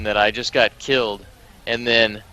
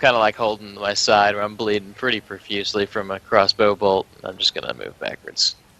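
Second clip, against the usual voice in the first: usual speaking voice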